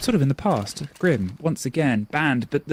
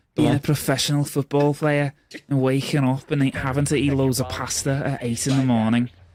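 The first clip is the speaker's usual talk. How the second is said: put-on botched Liverpool Scouse accent. Paraphrasing a professional football player, in a bad Scouse accent. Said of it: "that was bad than I thought it would be as a Scouse accent".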